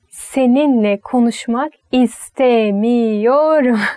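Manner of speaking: slow, deliberate Turkish, each word slowed. Showing how Turks add angry emphasis, slow, deliberate Turkish phrase. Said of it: "you can say slowly. It sounds more angry. Did you know that? Like".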